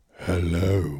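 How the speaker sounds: low, put-on seductive sexy voice. Greeting the other speaker at the start of the podcast: put-on sexy voice. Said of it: "my sexy voice".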